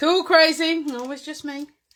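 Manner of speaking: sassy attitude. Reading a stamp's words aloud to show them, with a bit of attitude. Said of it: "say it with a little bit of a tood".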